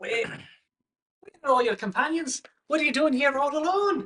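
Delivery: put-on very high-pitched, loud Irish accent. Voicing Dinky as he comes out to greet you: Dinky's Irish accent. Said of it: "he's speaking in an Irish accent".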